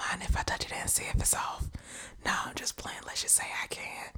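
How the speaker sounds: sleazy, soft, unvoiced whisper. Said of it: "Let me whisper in your ear".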